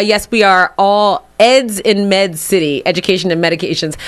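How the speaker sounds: plain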